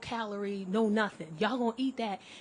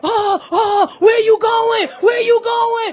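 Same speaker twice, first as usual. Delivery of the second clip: mock panic, very high, loud and drawn-out; 12 semitones higher, 16 dB louder than usual. Retelling a date's reaction to a reclining seat: imitating someone panicking. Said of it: "He start to panic".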